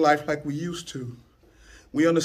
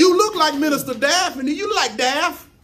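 high, slow, amazed voice. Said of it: "People come up talk to you".

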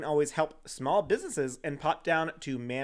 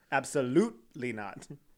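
"absolutely" with heavy, hard stress on "lute"; 2 semitones lower than usual. Acting out a capitalized group-message spelling: heavy stress on lute in absolutely. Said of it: "So you can get the emphasis. The emphasis in the one syllable".

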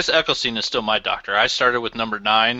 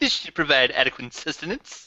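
put-on nerdy cartoon voice, higher pitch; 4 semitones higher, 4 dB quieter than usual. Repeating the Simpsons line just quoted: Comic Book Guy voice. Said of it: "Good comic book guy".

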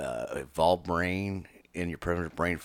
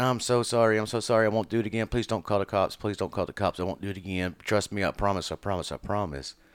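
mock repeated pleading, begging and apologetic; 3 semitones higher, 4 dB louder than usual. Acting out an abuser begging the victim after a beating: imitating an abuser begging. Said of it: "And I start begging".

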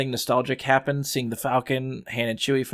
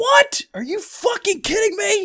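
mock very high, swooping, disbelieving shriek; 3 dB louder than usual. Recalling a woman's reaction when Thanos stabs Tony Stark, retelling a scream. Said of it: "one lady just screams".

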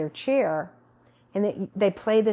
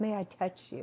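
soft, mild, gentler voice; 10 dB quieter than usual. Recalling a woman who would lean over and ask permission, imitating a gentler voice. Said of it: "In such the gentler voice".

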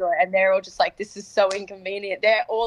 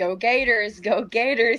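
very slow, stretched-out, cheerful put-on American accent; 3 semitones higher than usual. Retelling how strangers greet the team at airports: imitating an American accent. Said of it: "I did the accent as well".

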